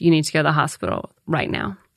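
plain

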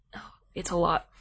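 soft, mock overcome whisper.

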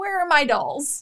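put-on spooky, creepy old woman voice. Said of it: "creepy lady with".

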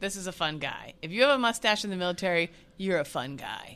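ordinary delivery

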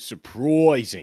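put-on Australian accent, stretched, drawn-out u. Coaching someone's accent, demonstrating an Australian accent with a drawn-out U. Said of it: "You have to draw out the U".

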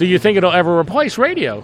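heavily sarcastic delivery with swooping pitch. Recounting a BBC radio interview, imitating the host asking sarcastically. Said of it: "and he's asking sarcastically".

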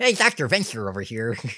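put-on lisping cartoon voice. Trying out voices and calling out to Dr. Venture, in a Billy Quizboy lisp. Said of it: "That's the lisp that I'm doing".

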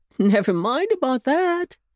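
laughing while speaking. The bunny uncle replies, laughing. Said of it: "laughed the bunny uncle".

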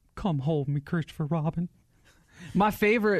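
elderly cartoon character voice. Voicing the sad old bear as his young playmate leaves, in the Family Guy old man voice. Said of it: "Why'd you just do the old man".

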